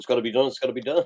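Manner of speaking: unflustered, stoic, matter-of-fact delivery with resolve. Retelling how Peter answered the plan: imitating stoic Peter. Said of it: "Peter's very stoic, and he just goes".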